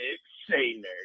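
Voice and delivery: radio announcer voice, intoning. Retelling greeting someone in an elevator: Big Voice Bob voice. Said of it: "the Big Voice Bob's voice".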